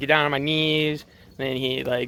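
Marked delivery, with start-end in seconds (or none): none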